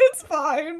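play-acted tearful voice, fighting back tears. Retelling how someone answered, holding back tears: imitating someone holding back tears. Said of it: "He's holding back tears".

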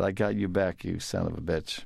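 normal talking voice

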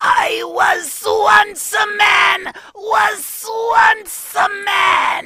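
very high, very slow, drawn-out villain shriek. Doing a homage to the person addressed, in Cobra Commander voice. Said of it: "let me just do this just in my homage to you as Cobra Commander".

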